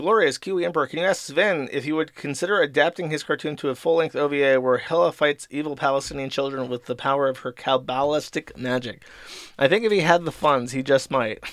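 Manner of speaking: plain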